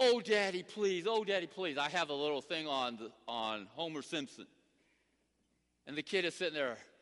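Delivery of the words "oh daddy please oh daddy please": put-on pleading, begging like a small child. Illustrating a point to listeners, imitating a pleading little kid. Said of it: "You were just like that little kid".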